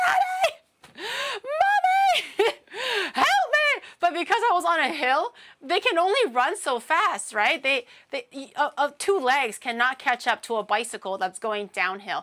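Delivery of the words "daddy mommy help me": mock very high, very slow, drawn-out scream. Retelling a childhood bike ride downhill, calling to the parents: retelling a scream for help. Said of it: "And I'm like screaming".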